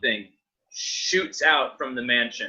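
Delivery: plain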